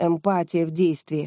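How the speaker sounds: ordinary delivery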